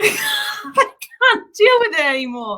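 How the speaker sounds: giggling, laughing, very high-pitched, swooping speech. Retelling a funny moment, laughing while talking. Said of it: "I can't stop laughing about it".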